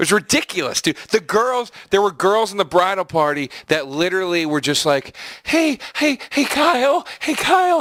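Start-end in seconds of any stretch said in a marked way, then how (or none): 5.4-7.8 very high, drawn-out calling for attention. Retelling how girls called out to a guy: imitating girls trying to get attention. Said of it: "just trying to get his attention".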